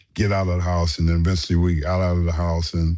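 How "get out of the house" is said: ordinary delivery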